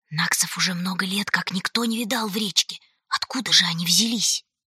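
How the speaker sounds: agitated, excited, anxious whisper. Whispering into a companion's ear, an agitated whisper. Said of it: "взволнованно прошептала".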